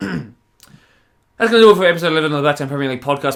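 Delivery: loud, pushed through all in one go. Closing a podcast episode, rushing the sentence: as fast as possible. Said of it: "say this next sentence as fast as physically possible".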